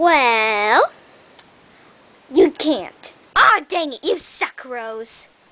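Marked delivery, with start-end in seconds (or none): 4.0-5.3 soft, under-the-breath muttering. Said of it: "Excuse me?".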